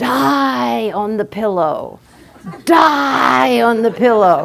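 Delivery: mock booming, fierce, very loud shout, "die" stretched. Retelling a monk shouting into the room after the ritual, retelling a very loud shout. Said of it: "shout into the room in a very loud voice".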